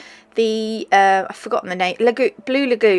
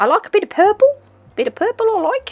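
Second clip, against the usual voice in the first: faint put-on Australian lilt, very high pitch; 11 semitones higher than usual. Narrating a nail tutorial, slipping into a slight Australian accent. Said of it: "saying it in a slightly Australian accent".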